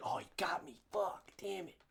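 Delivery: very hushed, muttered under the breath. Retelling how someone reacted to being caught out: imitating Chris's voice. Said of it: "hear it in his voice".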